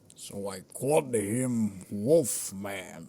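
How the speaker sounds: very slow showman voice, every word stretched out. Talking about comic books with another speaker: Stan Lee impression. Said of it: "Is that your Stan Lee impression?".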